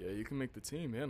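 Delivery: normal talking voice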